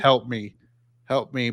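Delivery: put-on robot voice. Quoting what robots in a show say, in a robot voice. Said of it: "but in the robot voice".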